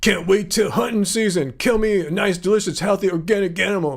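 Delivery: put-on caveman voice, simple speech. Trying a comedy bit a second time, in a caveman voice. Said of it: "maybe that's kind of my caveman voice there".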